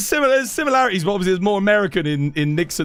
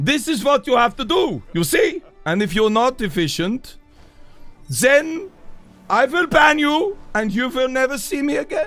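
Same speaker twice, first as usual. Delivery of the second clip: put-on angry yelling in German accent, higher pitch; 6 semitones higher than usual. Playing an annoyed German character scolding a crowd of hunters, angry German yelling. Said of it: "try and do the angry German that is yelling".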